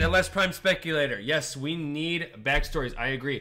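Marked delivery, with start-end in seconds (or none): none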